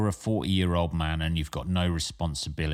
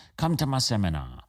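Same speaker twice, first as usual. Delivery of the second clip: terrible, bad, fake put-on Chinese accent; 4 semitones higher than usual. Quoting a stage performer's character line, in a bad chinese accent. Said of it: "a terrible version of uh, of any um, uh, Chinese accent".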